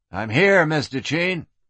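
ordinary delivery

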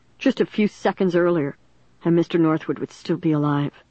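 ordinary delivery

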